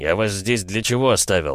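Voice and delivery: ordinary talk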